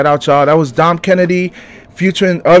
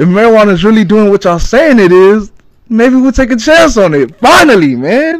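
excited, fired-up yell, high and swooping; 5 semitones higher, 5 dB louder than usual. Podcast host addressing listeners, yelling excitedly. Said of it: "forgive me for yelling".

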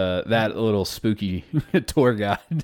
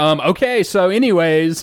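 put-on peeved, annoyed, very slow, very drawn-out delivery; 9 semitones higher, 7 dB louder than usual. Retelling how the tour guide reacted, imitating an annoyed tour guide. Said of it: "The tour guide's pissed".

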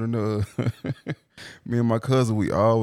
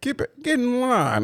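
heavy put-on Southern accent, much higher, slower; 14 semitones higher than usual. Recalling how they called a meeting, in a super hard Southern accent. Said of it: "They was getting some super hard Southern accent".

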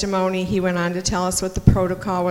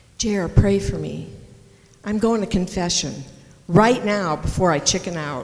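put-on whisper. Retelling a whispered request in a church pew: imitating Mary whispering. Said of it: "she whispered to me".

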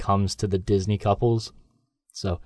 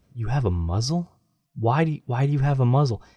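put-on voice full of sadness, sorrowful; 3 semitones higher than usual. Quoting a character who asks why she has a muzzle: imitating his sad voice. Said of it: "the sadness in his voice when he's like".

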